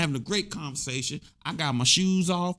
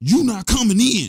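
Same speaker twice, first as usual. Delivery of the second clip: very loud blast of a yell; 4 semitones higher, 9 dB louder than usual. Retelling someone yelling at an unknown woman at the door, retelling a yell.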